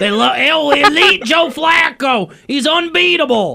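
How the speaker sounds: put-on laid-on Baltimore local accent. Mocking how Ravens fans talk, in a put-on Baltimore accent. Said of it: "Is that your Baltimore accent?".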